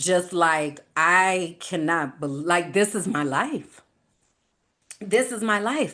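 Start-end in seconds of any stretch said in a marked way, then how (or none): 0.9-5.9 mock crying hard, sobbing with broken-off words. Retelling own reaction while listening to an audiobook introduction: imitating own sobbing. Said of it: "I'm talking snotty nose crying".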